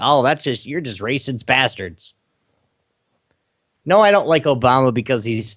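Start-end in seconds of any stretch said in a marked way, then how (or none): none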